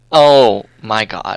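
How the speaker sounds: repulsed, grossed-out, disgusted outburst. Playing a character reacting to a messy room: disgusted. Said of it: "just such a disgusted face".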